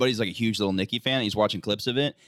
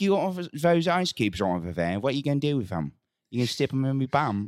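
put-on creepy cockney voice, pitched higher; 4 semitones higher than usual. Retelling what was said to a girlfriend at home: Cockney pervert voice. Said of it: "I just do those around the apartment".

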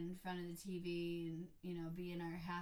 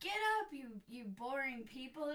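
put-on yell, pitched much higher; 7 semitones higher, 4 dB louder than usual. Retelling how Nana threw marshmallows at everyone lying around, imitating Nana yelling. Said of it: "yelling at them".

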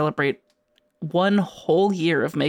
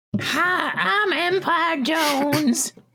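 put-on very high, cartoonish teen-girl voice; 12 semitones higher than usual. Playing the hero Empire Jones in a made-up series, sounding like Teen Girl Squad. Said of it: "Why do you sound like Teen Girl Squad?".

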